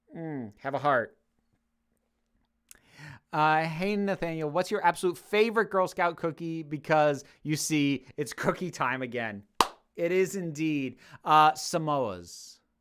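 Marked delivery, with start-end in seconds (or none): none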